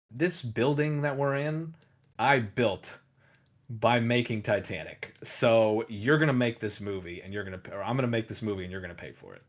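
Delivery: plain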